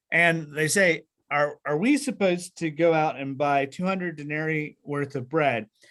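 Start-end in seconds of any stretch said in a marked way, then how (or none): none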